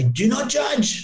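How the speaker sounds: put-on Persian accent. Quoting a mentor's mother's saying to a podcast guest: put-on Persian accent. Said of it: "I'm trying to put on a Persian accent there".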